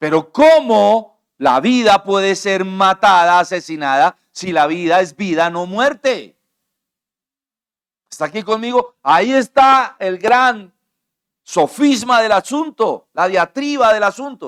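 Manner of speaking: loud, high, fervent, impassioned passionate shouting. A speaker addressing listeners, later apologizing for it, shouting passionately. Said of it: "estoy gritando, estoy apasionado".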